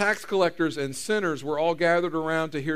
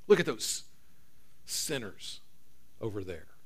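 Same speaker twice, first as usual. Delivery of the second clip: mock breathy, hushed whisper full of disdain; 6 semitones lower, 8 dB quieter than usual. Retelling how the religious crowd spoke of sinners, mock-disdainful. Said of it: "Said it with disdain".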